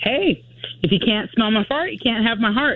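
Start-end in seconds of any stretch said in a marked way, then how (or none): none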